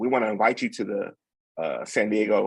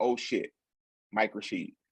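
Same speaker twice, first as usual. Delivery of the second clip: muttering under breath, much quieter; 7 dB quieter than usual. Recalling spotting someone at the Fit Expo, retelling muttering under breath. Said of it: "under my breath".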